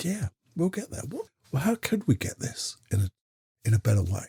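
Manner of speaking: kind, soft, gentle musing tone. Demonstrating how a kind, gentle observation sounds, in a softer voice. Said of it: "Hasn't that got softer?".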